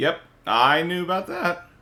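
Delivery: cracked voice, breaking partway through. In a casual chat, answering the other speaker's question, voice cracking. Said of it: "don't know why my voice cracked there".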